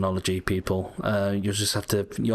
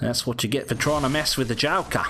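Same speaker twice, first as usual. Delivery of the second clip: put-on Australian accent, sudden; 4 semitones higher than usual. Talking to the game while playing, in an Australian accent. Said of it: "I don't know why I'm doing an Australian accent now".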